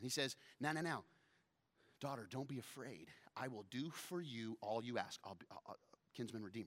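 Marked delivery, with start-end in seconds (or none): 0.6-5.2 acted, a little excited, eager to please. Acting out Boaz talking to a woman in the dark: excited Boaz. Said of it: "he's a little excited".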